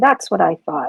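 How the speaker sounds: subdued, understated, low-key delivery. Narrating her reply after he apologizes and runs off, said quietly. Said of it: "kind of quietly".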